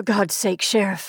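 hoarse, muttering voice. Narrator reads a cowering man speaking to the sheriff, muttering hoarsely. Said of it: "he muttered hoarsely".

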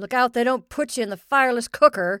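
very loud call carrying across a distance. A man calls to the goat as he leaves for work. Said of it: "he called to the goat".

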